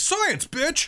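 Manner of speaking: very high, shrill, loud put-on orc shout. Imagining an orc character speaking: put-on orc voice. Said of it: "an orc who's like".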